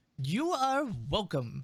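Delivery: gnomish creature character voice. Voicing a character who answers a thank-you: gnome-like voice. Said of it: "he sounds more like a gnome right now".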